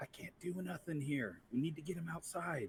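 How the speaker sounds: soft, hushed half-whisper under the breath. [name] nods toward the guy and speaks to Max; very low half-whisper. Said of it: "whispers in a very low voice".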